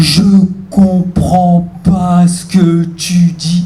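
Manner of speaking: put-on very slow, dragging old woman voice with feigned confusion.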